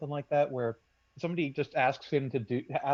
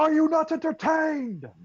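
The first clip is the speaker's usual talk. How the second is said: very high, dramatic, theatrical screaming; 14 semitones higher, 8 dB louder than usual. Taking their turn in the game, a character screams at the crowd. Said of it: "and then screaming".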